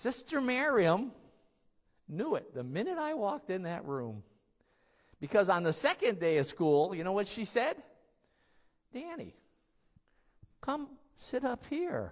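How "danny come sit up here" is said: put-on loving voice, higher and quieter. Retelling a teacher calling a student to the front: imitating Sister Miriam's loving voice. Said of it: "In the most loving voice I've ever heard".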